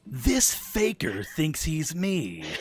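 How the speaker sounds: very slow, drawn-out character voice with swooping pitch. Doing a voice without voice prep: Shadow the Hedgehog voice. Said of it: "doing Shadow the Hedgehog".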